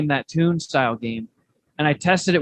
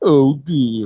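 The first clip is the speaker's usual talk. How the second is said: put-on cartoon character voice; 4 dB louder than usual. Retelling first trying a voice in the bathroom, cheeks pulled out: Droopy voice. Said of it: "I start doing the Droopy voice".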